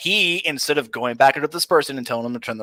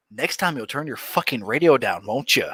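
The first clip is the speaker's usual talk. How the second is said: mock cold, hard, stone-cold officer's voice; 2 semitones lower, 5 dB quieter than usual. Retelling what the officer said to the driver: imitating a stone-cold officer. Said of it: "Like a stone cold motherfucker, he leans in and goes".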